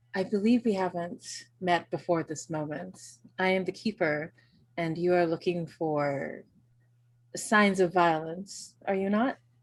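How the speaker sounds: hushed, very soft, grave, earnest. Soleil, the keeper, steps forward to greet a newcomer: very soft, serious voice. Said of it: "says in a very soft, serious voice".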